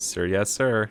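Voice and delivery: quiet, very heavily sarcastic delivery. Retelling the reply to being told to follow orders: acting out a sarcastic reply. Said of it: "I say very sarcastically".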